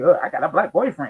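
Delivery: bragging, showy, boastful show-off tone. Imitating a woman who wants to show up her father: imitating a woman showing off. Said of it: "And they wanna show, show 'em up".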